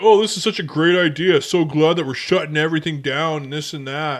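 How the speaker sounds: super sarcastic, dripping, fake-cheery tone. Quoting a person's sarcastic online post: imitating a super sarcastic guy. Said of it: "one guy's super sarcastic about it".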